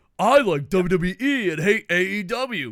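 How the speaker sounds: put-on speaking with a Japanese accent. Speaker impersonates a japanese friend impersonating an american. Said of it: "an impersonation of a Japanese person impersonating an American person".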